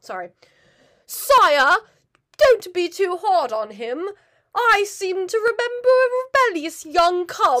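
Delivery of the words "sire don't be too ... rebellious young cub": put-on unhurried, careful, loud, pitched-up British accent. Quoting Zazu's line from the movie: John Oliver accent. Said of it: "let me do my best John Oliver accent".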